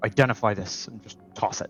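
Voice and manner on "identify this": grumbly, muttered under his breath. Voicing a grumpy character tossing a trident, grumbly under his breath. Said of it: "he'll just say under his breath, very grumbly".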